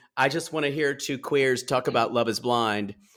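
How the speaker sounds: ordinary talk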